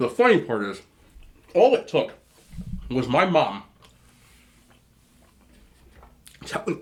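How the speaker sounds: talking with mouth full while chewing. Telling a story about a fish sandwich, talking with mouth full. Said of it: "Sometimes I talk too much, my mouth full".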